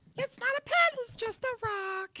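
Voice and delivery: very high-pitched character voice. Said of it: "It helps me get into character".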